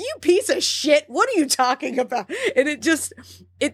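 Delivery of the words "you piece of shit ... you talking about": light, pitched-up, half-hearted yell. Retelling podcast hosts reacting to a horror movie villain: imitating someone yelling. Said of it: "yelling at him".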